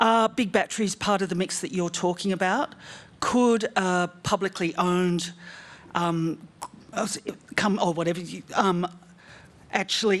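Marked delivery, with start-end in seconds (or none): 3.2-10.2 stuttering, broken-off phrasing with halting false starts. Asking a guest a question and losing the thread, stumbling over words. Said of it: "I'm just stuttering like an idiot".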